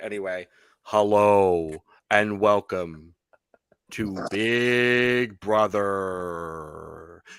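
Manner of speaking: low, slow spooky voice. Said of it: "you can't do that voice the whole time".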